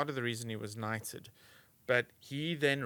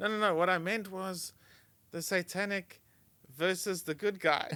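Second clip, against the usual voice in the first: put-on Indian accent, pitched up; 7 semitones higher, 3 dB louder than usual. Retelling a joke he once told, said in an indian accent. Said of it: "I went to it in an Indian accent".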